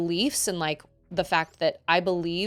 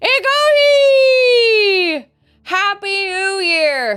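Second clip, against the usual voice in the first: tongue held away from palate, higher and louder; 13 dB louder than usual. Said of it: "I'm supposed to keep my tongue from touching".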